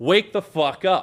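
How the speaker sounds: acted, toned-down, mild yell. Retelling yelling at a friend who fell asleep driving: retelling a yell. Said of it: "And I just yell".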